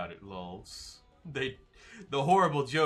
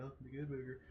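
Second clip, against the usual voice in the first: hushed, softly murmured delivery; 15 dB quieter than usual. Trying to do the Good Burger greeting voice. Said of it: "I used to be able to do the voice".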